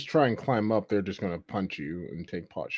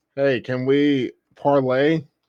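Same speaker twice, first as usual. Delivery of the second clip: yelled, raised voice, pitched up and slow; 6 semitones higher, 11 dB louder than usual. Calling out as Kono to the Warforged to ask for parley: Kono yelling a request. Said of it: "Kono's gonna yell at the Warforged".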